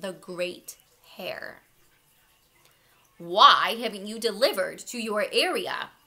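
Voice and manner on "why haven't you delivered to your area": demanding, very loud voice. The Great Hare confronts a rabbit nose to nose, demanding. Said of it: "Sir Byron demanded".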